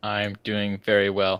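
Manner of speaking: flat, level, machine-like robotic monotone. A co-host answers how he is doing at the show's start, sounding like a robot. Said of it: "You sound like a robot".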